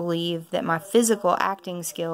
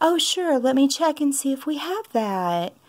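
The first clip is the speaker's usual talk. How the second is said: mock very sympathetic shop-clerk tone, high voice; 8 semitones higher than usual. Retelling how a Barnes & Noble employee's tone changed: imitating a sympathetic high voice. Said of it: "his voice got very sympathetic and raised about an octave".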